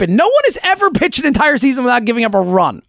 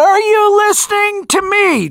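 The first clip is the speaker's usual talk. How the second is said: mock cupped-hands echo voice, higher; 8 semitones higher than usual. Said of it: "I put my hands up to my mouth".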